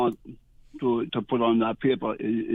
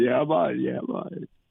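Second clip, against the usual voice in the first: imitated deep baritone. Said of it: "That baritone voice?".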